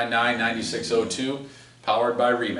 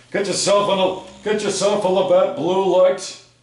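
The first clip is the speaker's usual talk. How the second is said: loud, high-pitched local beer-commercial radio announcer voice; 8 semitones higher, 7 dB louder than usual. Repeating the sponsor line in Bill Simonson's voice. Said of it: "That's Bill Simonson's voice".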